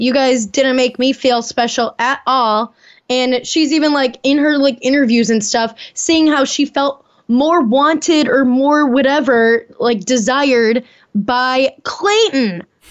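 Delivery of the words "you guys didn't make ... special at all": ordinary talk, nothing marked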